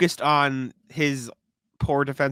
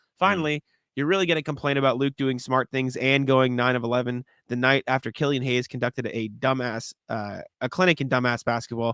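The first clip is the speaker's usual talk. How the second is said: ordinary talk, nothing marked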